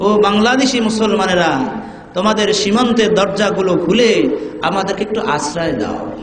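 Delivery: ordinary delivery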